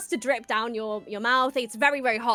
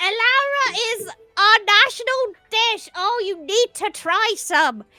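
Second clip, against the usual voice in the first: put-on little old lady voice, much higher and louder; 10 semitones higher, 6 dB louder than usual. Retelling how an old lady offered them food, the speaker voices her: little old lady voice. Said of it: "this old old little lady".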